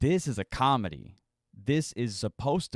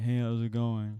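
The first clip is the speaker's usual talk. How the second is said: mock deadpan delivery. Showing the other person how the line was said, imitating a deadpan delivery. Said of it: "Super deadpan, right?".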